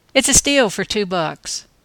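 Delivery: ordinary delivery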